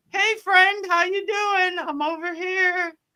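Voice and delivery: very high, little, tempting, craving voice. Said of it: "It's calling you".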